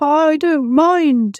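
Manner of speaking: small, shaky, trembling voice. Narrator reads Mister Peacock answering Piggo after his tail is ruined, in a shaky little voice. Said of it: "said Mister Peacock in a shaky little voice".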